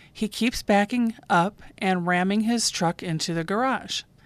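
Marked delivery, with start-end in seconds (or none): none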